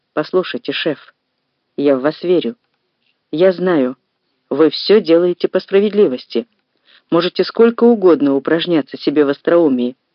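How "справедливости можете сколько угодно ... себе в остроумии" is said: ordinary delivery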